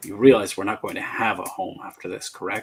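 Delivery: quiet, hushed, hostile, aggressive voice. Voicing the younger stranger after a pause: quiet but aggressive voice. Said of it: "quieter, but, but still quite as aggressive".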